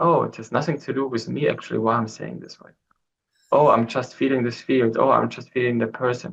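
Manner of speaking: normal talking voice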